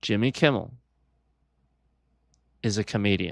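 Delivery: conspiratorial, secret-telling tone. Pretending to tell a big secret the feds might hear: mock hushed voice. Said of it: "I don't wanna say it too loud".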